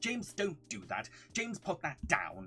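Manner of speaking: put-on Queen's English, received pronunciation accent. Describing how their mum talks, doing a posh Queen's English accent. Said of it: "My mum has a proper Queen's English accent. Really talks like this".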